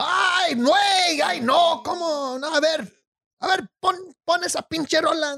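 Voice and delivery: obnoxious, caricatured Spanish radio host voice. Discussing favorite voices, the speaker does a caricatured Spanish radio host voice. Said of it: "I think I did a pretty good impression".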